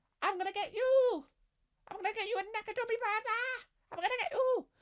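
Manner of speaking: very high puppet voice. Bruce Willis's character as played by Elmo, in an Elmo voice. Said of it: "This is my impression of Elmo".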